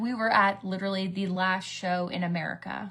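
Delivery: normal talking voice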